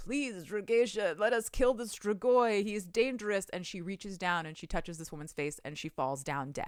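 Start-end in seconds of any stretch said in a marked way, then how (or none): 0.0-3.5 mock beseeching, begging, pleading tone. Retelling a scene where a woman grabs her skirts: imitating someone begging. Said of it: "starts begging".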